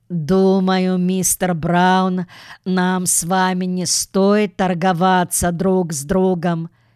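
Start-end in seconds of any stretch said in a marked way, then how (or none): none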